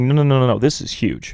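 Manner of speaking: ordinary talk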